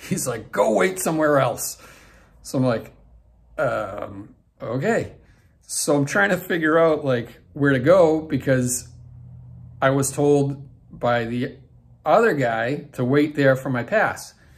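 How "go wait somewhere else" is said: toned-down, dismissive boss voice. Retelling what a man told them while waiting at an arena: Vince McMahon 'you're fired' voice. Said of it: "not quite in like that you're fired Vince McMahon voice".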